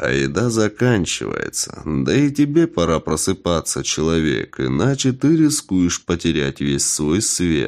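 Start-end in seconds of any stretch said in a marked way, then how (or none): none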